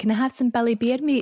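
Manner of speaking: put-on Scottish accent. Retelling a mum ordering at a deli counter: imitating mum's Scottish accent. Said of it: "obviously my mum's Scottish".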